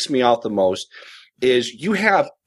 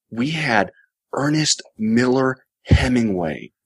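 play-acted very slow, condescending, spiritual voice; 2 semitones lower than usual. Retelling what people say after a temple visit: imitating a soft, condescendingly spiritual voice. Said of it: "soft, almost condescendingly spiritual voice".

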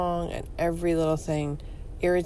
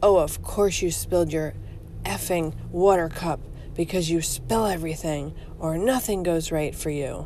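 put-on nasty, angry voice, much faster. Describing the angry voice in their head after a small mishap, imitating an angry inner voice. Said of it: "I hear this angry voice in my head".

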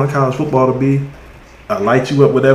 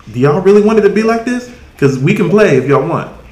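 put-on pitched-up, pointed challenging tone; 5 semitones higher than usual. Speaker repeats what a man was telling everybody, retelling a warning. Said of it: "he's warning us".

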